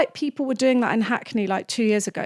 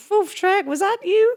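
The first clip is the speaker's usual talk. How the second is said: squeaky, very high cartoon donkey voice; 10 semitones higher than usual. Acting out how the sister imitates Donkey, Donkey impression. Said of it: "a really good impression of Donkey".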